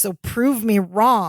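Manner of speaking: put-on annoyed voice. Retelling a sitcom scene, imitating annoyed Larry. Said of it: "Larry is so annoyed right now".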